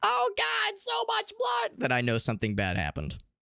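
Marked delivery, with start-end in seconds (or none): 0.0-1.7 tiny, very high, very slow, creaky voice. Speaker imagining a voice from inside their smoking computer, small voice from inside. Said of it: "I hear like a small voice inside say".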